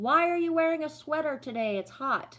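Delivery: mock high, shrill scream, shouted across a distance. Retelling a woman screaming at her partner from afar, imitating her screaming. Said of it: "she's screaming at him from afar".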